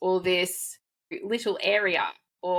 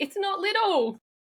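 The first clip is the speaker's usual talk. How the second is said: choked-up, tearful, very high-pitched voice; 12 semitones higher than usual. Stressing how much women's impact matters, teary. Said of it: "I'm getting teary now".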